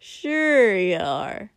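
loud, sniggering snicker. Narrator reading Kotsky teasing Shoto about his liquor tolerance, snickering. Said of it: "Kotsky snickered".

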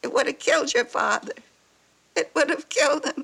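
high, tearful, weeping through the words. Speaking to a son who just got fired, crying. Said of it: "I can't help it".

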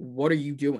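plain

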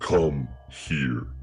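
rumbling, changed voice. Retelling a man calling a waiter over to his side: rumbling voice. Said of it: "it rumbles out of him a little bit".

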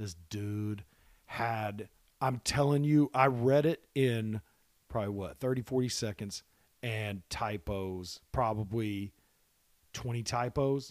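voice dropped low and hushed, drawing in. Speaking to the guys after asking them to listen, in a lowered voice. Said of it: "I'm going to lower my voice real quick".

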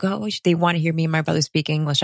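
ordinary talk

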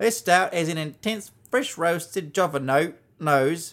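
put-on Australian accent. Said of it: "was that Australian accent".

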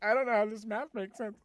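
ordinary delivery

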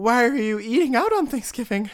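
tearful crying, pitched way up, very high. Retelling a TikTok of a server sobbing at work: imitating someone crying. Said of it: "And then she's crying".

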